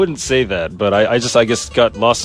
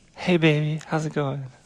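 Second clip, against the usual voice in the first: put-on girl voice, higher and quieter; 6 semitones higher, 7 dB quieter than usual. A podcast guest, asked by the host to try it, imitating a girl's voice. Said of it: "can you imitate a girl's voice?".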